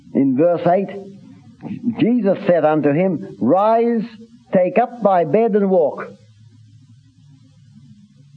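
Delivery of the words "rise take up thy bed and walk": higher, raised commanding voice. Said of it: "this was a commanding tone".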